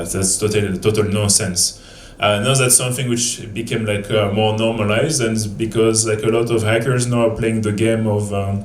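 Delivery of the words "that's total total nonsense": ordinary talk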